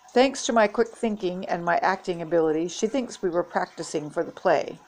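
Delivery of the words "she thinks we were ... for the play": ordinary delivery, nothing marked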